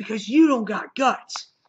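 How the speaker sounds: acted angry jeering. Retelling a comic scene where a character taunts another: imitating someone getting angry. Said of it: "he starts getting all pissed off at him".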